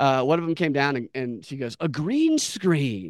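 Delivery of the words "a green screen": mock awestruck, amazed, wondering marveling. Retelling a real estate agent seeing a green screen: imitating amazed wonder. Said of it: "she had never seen a green screen before".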